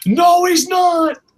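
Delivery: shrill, very high, loud screaming cry. Retelling what another person screamed in a story: imitating someone screaming. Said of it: "And James screams".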